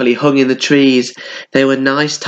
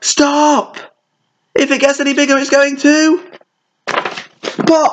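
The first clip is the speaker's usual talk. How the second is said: very high-pitched crying out; 13 semitones higher than usual. The others, watching him blow up the balloon, crying out. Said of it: "till the others cried".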